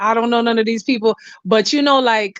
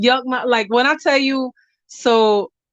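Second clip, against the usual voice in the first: ordinary talk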